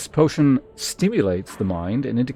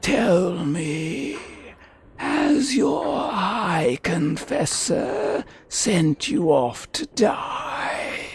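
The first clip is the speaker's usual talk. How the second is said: hollow, spectral ghost voice, pitched up; 7 semitones higher than usual. Speaker voices a ghost character questioning someone: ghost voice. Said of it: "but it's a ghost for now".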